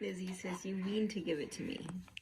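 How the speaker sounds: soft, unvoiced whisper.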